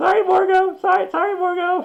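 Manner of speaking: very high, slow, cowering, begging voice. Voicing goblins hunkered down in webbing after their boss falls: cowering goblins begging. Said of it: "all sort of hunker down in the webbing and be like".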